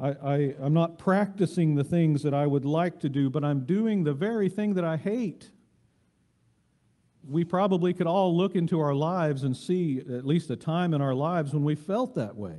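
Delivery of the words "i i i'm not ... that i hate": ordinary delivery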